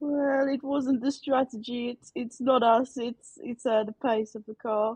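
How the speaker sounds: very slow, drawn-out, clumsy put-on Italian accent. Doing an impression of the Ferrari team principal in post-race interviews: imitating Ferrari team principal, Italian accent. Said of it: "I can't do an Italian accent".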